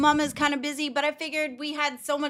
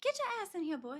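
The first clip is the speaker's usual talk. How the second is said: very quiet, gentle, mild voice; 4 semitones higher, 11 dB quieter than usual. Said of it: "I would've been like".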